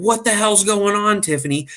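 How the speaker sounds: mock frantic, very high, panicked outburst. Retelling how the mom came running out of the bathroom: imitating a panicked mom. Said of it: "Her mom's flipping out".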